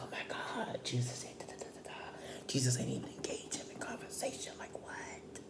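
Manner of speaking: hushed, breathy whisper. Retelling what the people around were saying, imitating people whispering. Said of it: "whispering like".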